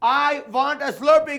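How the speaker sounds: put-on Indian accent. Coaching a group to repeat a line, in a good Indian accent. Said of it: "unless you do a good Indian accent".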